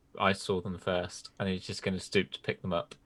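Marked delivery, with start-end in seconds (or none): none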